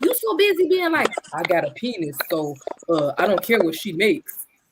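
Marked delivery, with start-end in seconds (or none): 1.3-4.4 caricatured man's voice, done mockingly. Ranting about low-earning men, mocking a man's voice. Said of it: "She has the best man impression".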